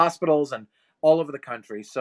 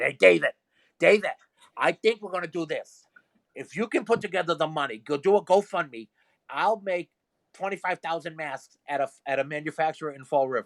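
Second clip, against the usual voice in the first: put-on Rhode Island accent; 3 semitones higher than usual. Quoting a woman who worked with him at his mother's shop, strong Rhode Island accent. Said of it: "I'll do her voice because she's very Rhode Island".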